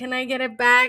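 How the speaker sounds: put-on tearful, crying little boy voice, pleading. Retelling what the crying child kept asking: imitating a crying child. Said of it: "he kept crying and being like".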